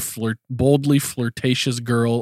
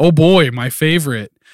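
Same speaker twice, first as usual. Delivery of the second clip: put-on genuine-sounding excitement, louder; 4 semitones higher, 8 dB louder than usual. Retelling a character's reply on hearing dinner is turkey burgers, imitating genuine excitement. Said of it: "He is genuinely excited about turkey burgers".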